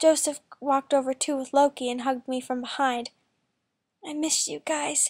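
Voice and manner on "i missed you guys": whispered, quieter and slower. Hugged by the stepbrothers, the narrator speaks to them, whispered. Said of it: "I whispered".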